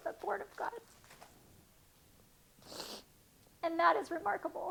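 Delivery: tearful voice. Reading a bible verse aloud and reflecting on it, crying. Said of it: "I'm so bummed I'm crying right now".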